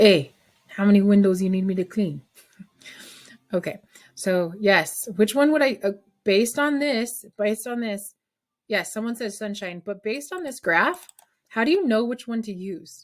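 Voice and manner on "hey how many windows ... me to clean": put-on, loud Italian mobster accent. Relaying what someone in class said, in an italian mobster accent. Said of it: "in an Italian mobster accent".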